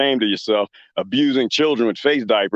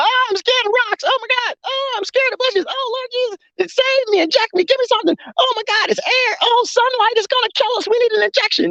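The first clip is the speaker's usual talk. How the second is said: exaggerated, very high, fake frightened whining. Mocking a group gathered at church retreats: mock scared voice. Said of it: "y'all could get together and be scared".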